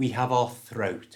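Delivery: ordinary delivery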